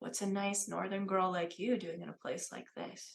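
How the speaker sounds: hushed voice, so quiet it is barely audible. Voicing a card player leaning close in a casino: quiet, barely audible voice. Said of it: "says so quietly that only you can hear her".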